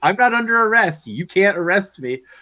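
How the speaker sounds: indignant, high-pitched angry rant, going off. Retelling a woman protesting her arrest to the sheriff, retelling her going off. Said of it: "Starts going off like".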